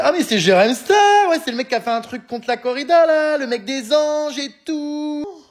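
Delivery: mock yelling. Retelling an arrested delinquent shouting to a policeman, imitating someone yelling. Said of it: "hurle au policier".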